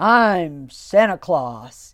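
very loud, very gruff, booming voice. Retelling a man who picked up the speaker's little girl, in a very gruff voice. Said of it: "in a very gruff voice".

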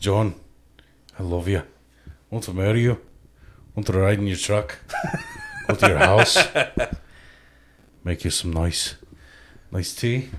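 put-on deep, low, swooping, sing-song Scottish accent. Serenading another speaker in a put-on scottish accent. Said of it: "I kinda like that accent".

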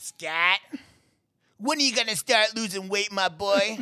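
pleading dad voice. Retelling what his dad said to him every day: imitating his dad. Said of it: "Imitation time".

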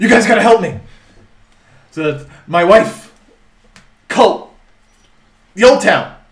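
very loud, high, frantic, panicked burst. A narrator voices a man bursting in and rushing to the players' table, panicked. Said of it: "and he's panicked".

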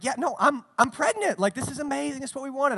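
caught off guard, surprised, high-pitched voice. Retelling the wife's reply after he denies the pregnancy: imitating wife sounding surprised. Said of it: "And she's sort of surprised".

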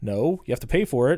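normal talking voice

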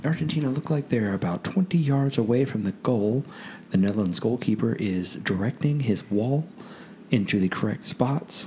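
very hushed, quiet golf broadcast commentator voice. Commentating Messi's World Cup free kick, golf commentator voice. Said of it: "going to go into my golf voice now".

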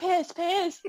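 high, mild mock yell like a little girl. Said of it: "the little girl's yelling".

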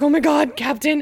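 very loud, shrill, panicked freak-out. Retelling a book scene, imitating Cress freaking out. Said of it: "freaking out 'cause she's like".

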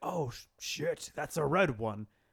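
growly movie-monster creature voice. Discussing a movie with a friend, the speaker acts out a moment: Venom voice. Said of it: "That was a good Venom voice".

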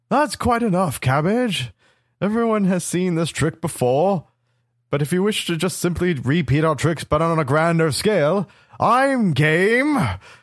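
big booming voice. Roleplaying a character who addresses Cabbage during a game, in a booming voice. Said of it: "I will do my booming voice".

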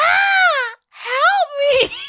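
very high, loud panicked scream.

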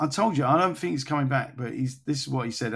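ordinary talk

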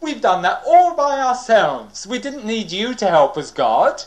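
smug, proud, bragging tone. Retelling what people said after destroying two small cities: imitating boasting. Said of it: "they're boasting about it".

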